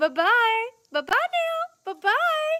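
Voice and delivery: very high, slow doll voice. Retelling how Barbie says goodbye at the end of Toy Story: Barbie voice from Toy Story. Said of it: "that was Barbie at the end of Toy Story".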